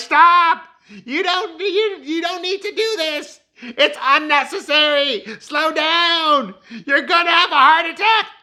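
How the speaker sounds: mock shrill yelling way up high, stretched out. Retelling how Carrie screamed at him on the stairs: imitating Carrie screaming. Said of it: "Carrie keeps screaming at him the whole time".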